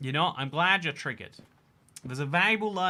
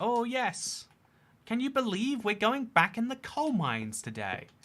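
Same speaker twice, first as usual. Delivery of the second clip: high, put-on posh British child accent; 9 semitones higher than usual. Speaker joking about children going back to the coal mines, in a rich british child accent. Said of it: "This is my British child accent".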